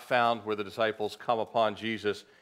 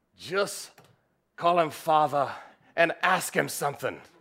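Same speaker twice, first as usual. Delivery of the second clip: best-effort, pitched-up put-on Scottish woman's accent; 6 semitones higher, 3 dB louder than usual. Retelling a story of a choir lady scolding a pastor: best attempt at Scottish accent. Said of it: "Best Scottish accent I've got".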